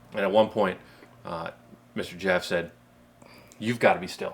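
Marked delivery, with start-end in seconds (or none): 3.6-4.3 kind but dead serious tone. Retelling a calm-down moment in a hunt: imitating Mister Jeff, kind but completely serious. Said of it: "said it in a kind way, but with, with complete seriousness".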